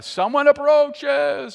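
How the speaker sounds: loud, slow, high-pitched yell.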